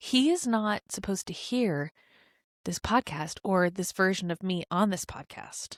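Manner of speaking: hushed whisper. A podcast speaker whispers because her husband is in the other room. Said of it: "I have to whisper right now".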